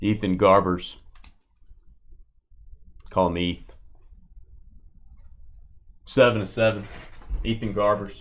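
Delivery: put-on beefed-up macho manly voice. Reading out card names while joking about sounding more masculine: put-on beefed-up masculine voice. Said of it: "I'll try to beef it up a little".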